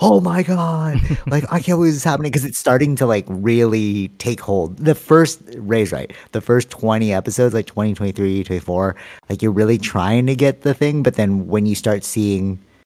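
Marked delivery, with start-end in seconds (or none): 0.0-2.3 worked-up, high-pitched, excited shouted outburst. Retelling a sister's reaction while watching a show: imitating someone shouting. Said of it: "shouting at".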